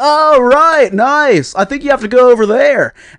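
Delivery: announcer voice, pitched way up and loud. Retelling an announcer's words and a reply to them, as an impression for a friend. Imitating an announcer. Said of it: "is that what he sounded like?".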